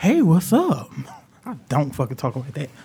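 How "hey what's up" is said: high, fake-nice, friendly host voice. Podcast host showing the greeting voice he puts on: fake nice voice. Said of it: "this nice fake ass voice I put on".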